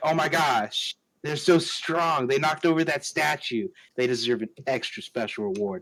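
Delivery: normal talking voice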